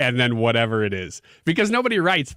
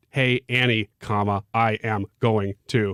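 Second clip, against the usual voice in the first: robotic dictation voice, lower and slower; 5 semitones lower than usual. Showing how they would dictate a message into their phone, robot voice dictating. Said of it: "I'm going to talk into my phone like a robot".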